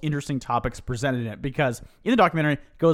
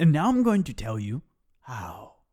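nature documentary narrator cadence and inflection; 3 semitones lower than usual. Imitating how he talks in the film: David Attenborough voice inflection. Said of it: "He still does his David inflection of his voice".

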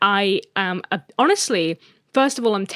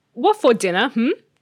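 choppy dog voice, chopped up word by word; 3 semitones higher than usual. The speaker shows the running joke of how they talk, like Bunny the TikTok dog. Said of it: "I talk like that dog on TikTok".

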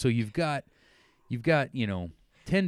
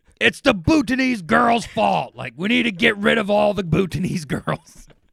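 very loud, high-pitched, rough top-of-the-lungs yell; 11 semitones higher, 10 dB louder than usual. Retelling what he yelled as his team was losing: retelling a shout. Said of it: "Just at the top of his lungs".

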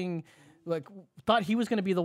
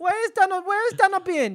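put-on voice drifting into Mexican accent, higher and louder; 13 semitones higher, 6 dB louder than usual. Improvising a skit, calling to Michael Cohen: Melania impression. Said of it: "Michael Cohen and Melania".

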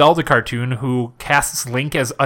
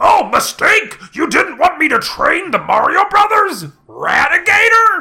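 very high, loud, slow character voice; 6 dB louder than usual. Retelling a cartoon scene where a call comes from the president: imitating Sergeant Slaughter. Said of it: "I'll say it like him".

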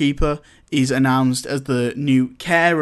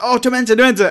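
high, loud jeering, taunting, mocking shout; 9 semitones higher, 5 dB louder than usual. Retelling a scene where Malfoy taunts a boy who fainted: mocking shout as Malfoy. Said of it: "he, so he, shouts".

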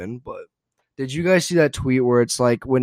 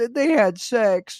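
very high, slow, drawn-out acted sobbing; 11 semitones higher than usual. Retelling what a crying contestant said about a fantasy suite: imitating someone crying. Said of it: "just crying 'cause she's like".

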